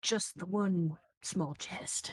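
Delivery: hushed, soft whisper. Playing Catrus in a tabletop game and answering back, whispering. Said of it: "I'm gonna whisper back".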